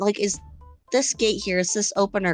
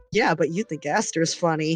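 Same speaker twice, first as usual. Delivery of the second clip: muttered quietly under the breath; 4 semitones lower than usual. Voicing a character's retort in a group scene: muttering under breath. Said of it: "Helia under her breath just went".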